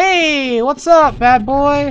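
taunting, mocking shouts.

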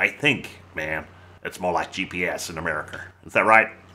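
bad, terrible put-on American accent. Talking to viewers on YouTube, in a terrible American accent. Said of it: "I know that was a terrible accent".

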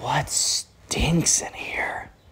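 very soft, slow, drawn-out hushed whisper. Retelling how James whispered to Zach in the room, imitating a whisper. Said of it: "He kind of whispers like".

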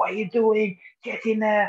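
high, loud scream. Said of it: "he will scream".

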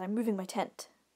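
ordinary talk, nothing marked

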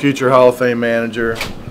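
pointed loud aside.

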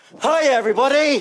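high, loud shouted voice. Host asks the audience to be really loud, then greets them; shouting a greeting. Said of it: "I'll shout".

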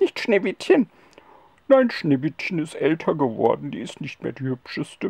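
deep spirit voice. Puppet show: the magic mirror spirit answers the other puppet; magic mirror spirit voice. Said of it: "ich bin der Geist aus dem Zauberspiegel. / ich bin der Geist aus dem Zauberspiegel".

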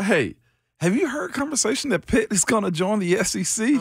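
words broken by laughter. Retelling a funny question from a listener, laughing while talking. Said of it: "I'm laughing right now saying it".

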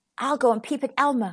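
ordinary talk

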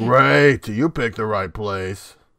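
rough, masculine character voice. Imitating a character's first line in the episode: gruff, manly Brawn voice. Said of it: "It's pretty gruff and a, a manly type voice".

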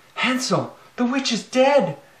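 very high, loud, shrill cry. Narrating a fairy tale, voice a girl calling to her brother: cried out. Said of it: "cried Gretel".

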